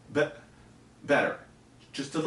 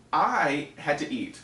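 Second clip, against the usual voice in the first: ordinary talk, nothing marked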